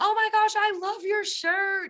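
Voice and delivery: mock yelled shout, very high-pitched. Retelling what someone yelled after pulling her car over: imitating someone yelling.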